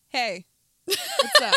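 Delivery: very high, loud friendly voice. Showing someone how you would impersonate them, impersonating the person you're talking to. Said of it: "I don't even know how I would impersonate you".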